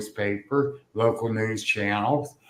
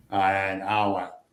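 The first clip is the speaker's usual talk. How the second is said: ordinary talk, nothing marked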